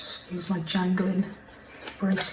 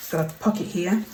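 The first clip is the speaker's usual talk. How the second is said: ordinary talk, nothing marked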